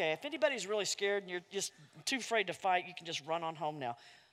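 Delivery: quick, hushed, rattled-off aside under the breath. Retelling what he told the men, as a quick, quiet aside. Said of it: "Then he says real quickly and quietly".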